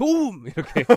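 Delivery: very loud, shrill, high-pitched one-word shout. Retelling the moment a teammate scored off the speaker's assist, retelling a loud shout. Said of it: "순간 제가 크게 소리쳤습니다".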